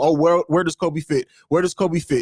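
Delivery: ordinary delivery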